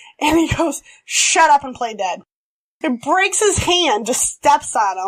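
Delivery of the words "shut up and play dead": usual speaking voice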